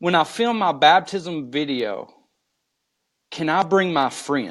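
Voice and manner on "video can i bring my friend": ordinary talk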